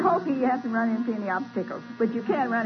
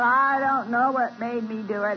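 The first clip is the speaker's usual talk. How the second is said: put-on southern Tennessee drawl, slower. Retelling what a woman said on the phone, in a southern Tennessee drawl. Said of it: "she's got this southern Tennessee drawl".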